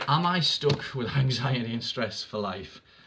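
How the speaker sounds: speaking through laughter, laughing through the words. Reading out a question about anxiety, laughing while talking. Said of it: "sorry I'm laughing".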